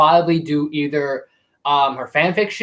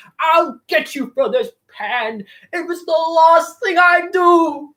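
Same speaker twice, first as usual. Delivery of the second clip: goofy, very high, drawn-out pirate voice; 13 semitones higher than usual. Showing how you hope Joaquin Phoenix will play the part, do a Hans Conroy Captain Hook voice. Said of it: "hear him do like the Hans Conroy Captain Hook going".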